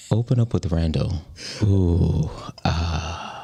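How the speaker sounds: ASMR tingle-style voice. Trying out a suggested voice to open the show: ASMR voice. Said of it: "I want to try this A- ASMR voice".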